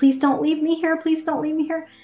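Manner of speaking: tearful, crying pleading tone. Retelling running after mom at kindergarten door: imitating own crying plea. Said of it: "And I was crying".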